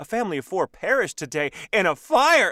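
loud, dramatic, overinvested news-anchor delivery. Reader explaining how they read copy in real time, like a news anchor really into it. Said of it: "I'm like that news anchor that gets really into it".

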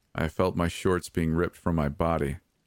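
usual speaking voice

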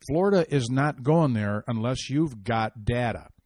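plain

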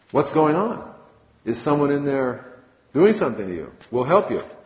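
loud, high-pitched shouting. Cyclopes outside a cave door yell to the one inside, yelling. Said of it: "they yell outside the door of the cave".

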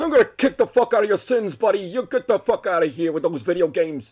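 put-on high-pitched, caricatured New York accent. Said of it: "He sounds like my caricature of a fucking New Yorker".

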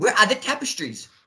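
put-on Irish accent. Retelling a line from a favorite movie scene: put-on Irish accent. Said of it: "him doing an Irish, you know, accent".

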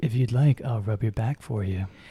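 calm, smooth, pleasant soothing voice. Closing a YouTube video, speaker tries the voice just described: nice, smooth, calm voice. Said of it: "talking in a nice, smooth, and calm voice".

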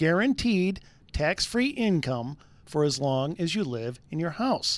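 slow, deliberate, word-by-word reading. Reading a sponsor's mortgage ad phrase on the radio; slow and deliberate. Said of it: "Let me say them slowly".

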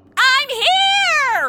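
very high shrill yell, drawn out. A woman the others think cannot hear them announces herself, yelling. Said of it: "Stop the yelling!".

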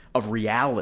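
ordinary talk

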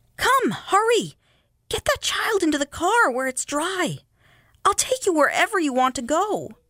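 very high, pressing, urgent pleading. A woman leans close to an old woman and a child, urgently. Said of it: "said urgently".

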